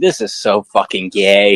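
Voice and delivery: put-on American Southern accent throughout. Retelling what a student said in his college Zoom class, in a Southern accent. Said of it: "in a Southern accent".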